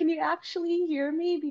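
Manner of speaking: concerned, worried asking tone, very high pitch. Retelling a question to the player being coached at a loud match: retelling a concerned question. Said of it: "just more like, concerned".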